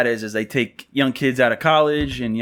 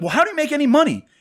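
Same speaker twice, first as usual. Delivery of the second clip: mock, very high-pitched, yelled raised voice. Retelling a sales call, raising the voice at the customer: retelling a raised voice. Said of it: "I could just see everyone's going".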